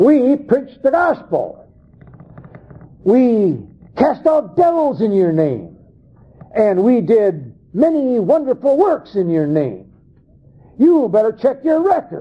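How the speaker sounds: high-pitched, argumentative, protesting tone. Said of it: "they're arguing at the judgment seat".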